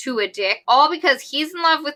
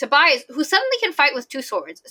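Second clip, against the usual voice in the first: plain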